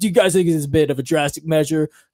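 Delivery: mocking, needling, taunting tone, put-on. Retelling a reporter's mocking question to uniformed guards: imitating Don Lemon mocking. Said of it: "mocking them, like".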